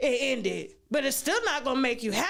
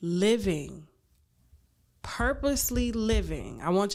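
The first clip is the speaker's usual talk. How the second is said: slow, measured, deliberate, purposeful delivery; 5 semitones lower than usual. Telling someone what happiness is so they really hear: talking slow. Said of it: "I'm talking slow 'cause I want you to hear me".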